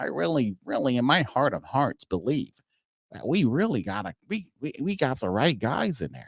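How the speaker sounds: sarcastic, mocking put-on voice. Mocking the team's general manager defending the coach: imitating the general manager. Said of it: "the dinosaur general manager that we got here that's talking about".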